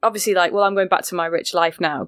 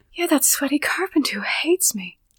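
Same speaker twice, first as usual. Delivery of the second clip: featherlight, breezy, airy, pitched-up voice; 7 semitones higher, 3 dB quieter than usual. Quoting a film scene to another speaker: Goldie Hawn impression. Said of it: "Goldie impression on point".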